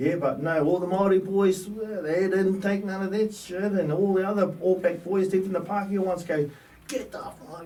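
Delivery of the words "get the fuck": put-on aggressive screaming voice. Retelling rugby players driving off an abuser: imitating someone screaming. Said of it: "screaming at us".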